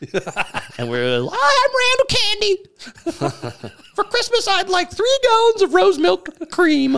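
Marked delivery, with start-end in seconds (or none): 1.3-7.0 goofy made-up voice, squeaky, very high and loud. Recalling a character he and friends used to voice, Randall Candy character voice. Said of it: "we used to do that voice".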